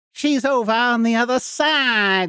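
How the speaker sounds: very high, nasal voice, stretched out. Arguing that two characters' voices differ, doing a nasal Tangina impression. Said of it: "there's more nasal in that".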